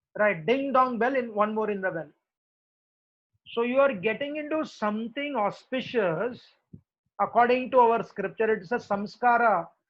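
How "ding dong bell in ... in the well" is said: normal talking voice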